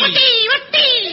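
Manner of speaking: mock indignant, high, loud wail.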